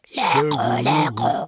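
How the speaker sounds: loud, drawn-out yelping chorus like rats. Dozens of rats echo their leader's words to a cat, yelping in chorus. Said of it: "glapirent en chœur".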